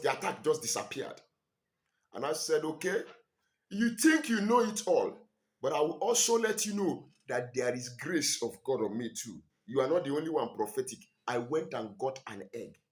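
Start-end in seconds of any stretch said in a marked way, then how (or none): none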